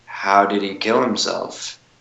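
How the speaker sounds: very slow, soft, deliberate delivery. Retelling the question he asked a man as he started getting chills: very slowly. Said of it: "I just say very slowly".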